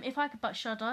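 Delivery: plain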